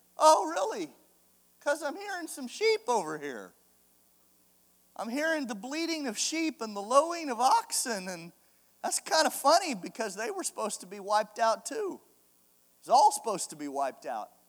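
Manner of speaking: soft, knowing, sing-song sarcastic tone. Retelling a prophet's reply about hearing sheep: imitating a sarcastic Samuel. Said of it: "he kinda has a little sarcasm in his voice".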